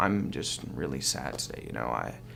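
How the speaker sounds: breathy, gravelly, creaky vocal fry. Demonstrating what speaking with vocal fry sounds like, creaky vocal fry. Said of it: "when you speak with it, it sounds like this".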